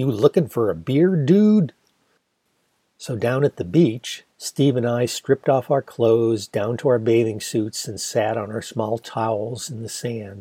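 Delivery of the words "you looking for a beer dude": put-on loud, swooping, nasal, sarcastic, over-the-top Midwestern accent. Answering a man who mimed drinking to ask for beer, in exaggerated nasal Midwestern accent. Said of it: "in my best exaggerated American nasally Midwestern accent".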